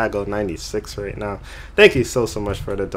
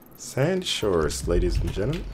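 subway train stop announcement voice; 4 dB quieter than usual. A streamer gets back to the game where they left off, subway train announcer voice. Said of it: "I don't know why I sound like the train thing".

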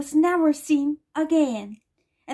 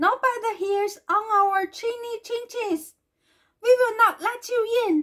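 scared crying out, high and frightened; 7 semitones higher than usual. Narrator reading the little pigs answering the wolf at their door, frightened cry. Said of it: "cried the frightened little pigs".

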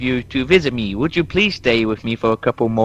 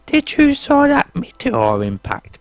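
put-on very high-pitched, sing-song little kid's voice; 13 semitones higher, 3 dB louder than usual. Asked by another speaker to do a little kid's voice: little kid's voice. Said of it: "can you do a little kid's voice?".

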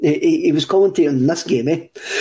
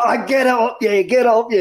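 mock excited shouting, higher and faster; 6 semitones higher than usual. Telling of a boy shouting along during a football match, imitating a boy shouting. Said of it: "he's shouting along to you".

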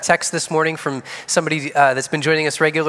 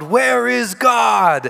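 booming preacher-style bellow, rough and high-pitched; 7 semitones higher than usual. A preacher shakes his finger in a boy's face, bellowing.

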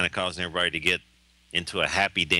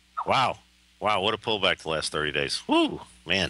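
sarcastic, mock amazement. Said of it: "I'm being sarcastic here".

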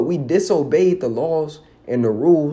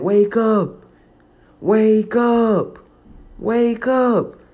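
very slow, high, stretched yelling, acted out; 6 semitones higher than usual. Retelling the end of a movie: imitating Laurence Fishburne yelling. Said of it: "he's just yelling at the, at the screen saying".

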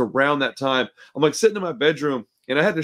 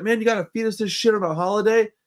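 put-on angry, pissed-off, pitched-up kid voice mouthing off; 6 semitones higher than usual. Retelling a kid's complaint at a holiday dinner: imitating an angry kid. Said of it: "so he got pissed off".

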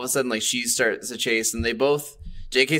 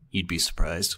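mock muttered aside, under the breath; 6 semitones lower, 3 dB quieter than usual. Retelling a man's reply to a grandmother, a remark under his breath. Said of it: "under his breath".

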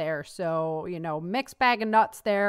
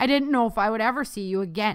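ordinary delivery

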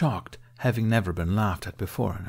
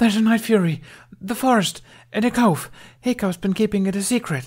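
very high, loud, gasping outcry; 12 semitones higher, 6 dB louder than usual. Reading a girl bounding out of the forest calling to the adults, gasping. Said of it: "she gasped".

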